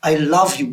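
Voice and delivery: heavy emphasis on the word love. English lesson on emphasis, repeating a sentence: stress on love. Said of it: "speaking with an emphasis or with power. So, cannot or love have to be kept within em".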